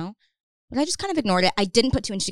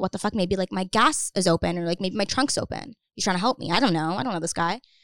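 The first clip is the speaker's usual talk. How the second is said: normal talking voice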